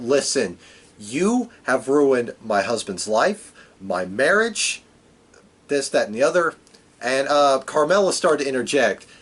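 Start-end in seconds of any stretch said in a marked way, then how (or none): none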